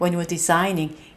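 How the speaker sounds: light "when you were", strong stress on designing. Explaining weak-strong rhythm in the phrase, put stress on designing. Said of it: "약강 이렇게 소리가 나요".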